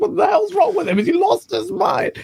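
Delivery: screamed, high-pitched voice. Speaker acts out a woman screaming at him while he laughs, imitating a woman screaming. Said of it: "She's screaming at me".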